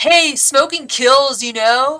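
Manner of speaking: very loud, high-pitched shouted yell. Telling how teens yelled at the brother's girlfriend, retelling their yell. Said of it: "they yell back at my brother's girlfriend".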